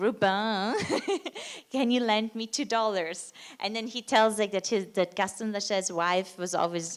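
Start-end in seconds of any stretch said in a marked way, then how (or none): 0.0-3.3 put-on thick, heavy French accent. Retelling what Gaston Lachaise said when asking Rubin for a loan, in a very French accent. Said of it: "he said like in a very French accent".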